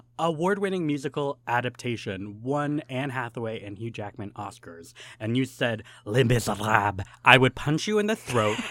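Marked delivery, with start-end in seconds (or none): 6.1-7.1 bad fake French accent, louder. Saying a musical's full title as an answer, in a bad French accent. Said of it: "say the full name in a bad French accent".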